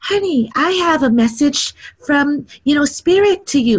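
sugary-sweet, very high voice. Retelling what a woman on the Big Island said to the speaker, imitating a sweet-voiced woman. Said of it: "in the sweetest voice".

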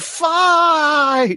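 shrill, very high, stretched-out, drawn-out shout. Acting out a character yelling outside to draw a crowd: imitating someone yelling. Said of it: "Keyleth yells".

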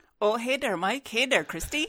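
genuine Minnesota-flavored Midwestern accent. Introduced on the show as the new fill-in from Minnesota, she greets both hosts: Midwest accent. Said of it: "There's that genuine Midwest accent".

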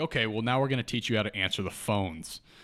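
ordinary talk, nothing marked

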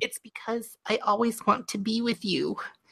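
very high-pitched, soft, small voice. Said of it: "a very high-pitched voice".

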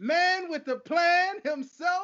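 boxing ring announcer style. Introducing a guest in the red corner: boxing ring announcer style. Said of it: "straight boxing style".

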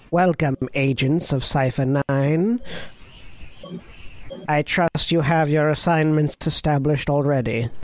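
alien droid voice. An Imperial protocol droid greets the arriving agents, Rodian droid voice. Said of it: "in that same Rodian voice you heard previously".

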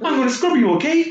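very high-pitched put-on Canadian accent. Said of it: "the second one was better".

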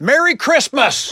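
mock, loud, very high called-out voice. Retelling greeting people in an airport security line: retelling a loud greeting. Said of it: "Kinda loud like that?".

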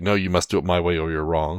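plain

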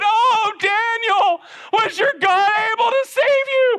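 very high, drawn-out, acted, desperate wail. Acting out the king calling into the lions' den: lamentable desperate cry. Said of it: "shouted out with a lamentable voice".

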